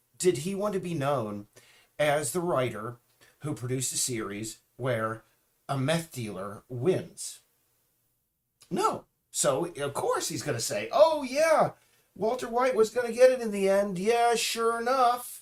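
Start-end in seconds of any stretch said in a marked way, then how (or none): 10.9-15.4 very high, very loud put-on voice. Imagining what a series writer would say: Justin Roiland impersonation. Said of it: "that was my Justin Roiland impersonation".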